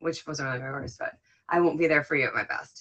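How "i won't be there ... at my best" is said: normal talking voice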